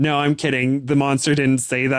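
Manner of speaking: ordinary talk, nothing marked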